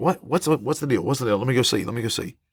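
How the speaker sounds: startled, alarmed, just-woken voice. Retelling waking up at night to a noise: imitating being startled awake. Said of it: "you're startled, you're awake".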